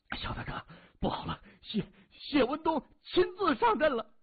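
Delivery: very high, quavering, trembling voice. Narrator reads a Southern Red Gate member running back with news, in a trembling voice. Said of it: "他颤声说".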